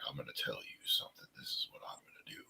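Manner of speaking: soft, hushed, intimate whisper. Show how Jake drew you in, unlike Roddy Piper, with a quiet Jake impression. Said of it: "he drew you in by being quiet".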